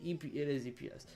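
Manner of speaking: fast, soft, garbled, weird delivery.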